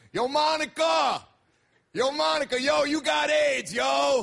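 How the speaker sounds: put-on yell, called out slow and high. Retelling how a stranger on the subway called out: imitating a guy yelling across tracks. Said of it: "this guy yells across the tracks".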